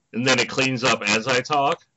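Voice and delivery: ordinary talk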